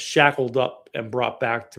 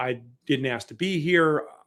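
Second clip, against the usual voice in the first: ordinary delivery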